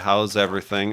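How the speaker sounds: flat, emotionless monotone waitress voice. Retelling a diner visit, imitating the waitress: imitating a monotone waitress. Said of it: "she just had the most monotone voice".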